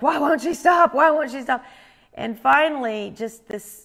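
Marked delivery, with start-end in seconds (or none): 0.0-1.6 agitated, heated, raised, pitched-up, repeating words. Retelling the other speaker's reaction while calming someone: imitating someone getting heated. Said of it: "you were getting heated up and like".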